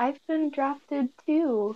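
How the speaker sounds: said under the breath, really quiet and soft. Speaking in character during a game scene, said really quietly. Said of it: "really quietly".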